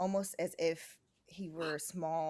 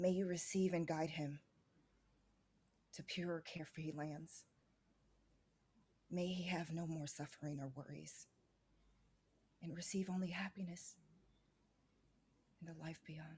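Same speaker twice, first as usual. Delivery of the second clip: muttering under her breath, quieter; 6 dB quieter than usual. Voicing a woman blessing a lost soul while holding his body, muttering. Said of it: "she's muttering".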